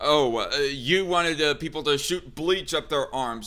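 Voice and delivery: ordinary talk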